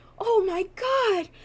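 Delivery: overjoyed, very high-pitched, slow, swooning gush.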